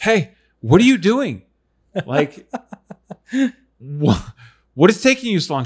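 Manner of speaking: loud, high yelling call. A parent recalls yelling from downstairs to an eight-year-old daughter upstairs: retelling a yell downstairs. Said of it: "I'm yelling at her from downstairs".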